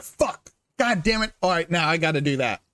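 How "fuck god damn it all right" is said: plain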